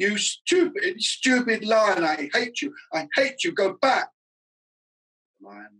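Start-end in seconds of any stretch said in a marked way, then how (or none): 0.0-4.1 very high, stretched-out, drawn-out yelling. Someone tries to drive off a lion that keeps following, yelled. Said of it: "Bertie yelled".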